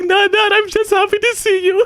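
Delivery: put-on happy tears, tearful and high-pitched. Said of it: "crying so damn loud".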